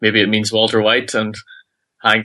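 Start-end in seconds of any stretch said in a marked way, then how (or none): none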